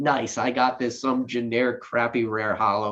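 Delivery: plain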